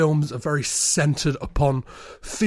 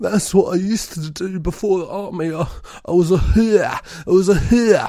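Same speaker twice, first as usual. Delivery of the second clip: put-on New Orleans accent, pitched higher; 3 semitones higher than usual. Retelling a tender moment where he answers her, in James Franco's weird New Orleans accent. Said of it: "this is the weird New Orleans accent".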